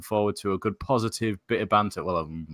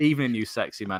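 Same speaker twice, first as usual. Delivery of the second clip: normal talking voice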